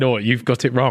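usual speaking voice

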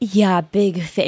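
nervous, flustered, husky, starstruck voice. Imitating the other speaker greeting a celebrity guest: imitating a flustered husky voice. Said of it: "your voice gets all, like, husky".

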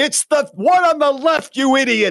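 acted-out very high, crazed scream. Retelling a man screaming into a live microphone, acting out the scream. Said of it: "he's screaming that into the microphone".

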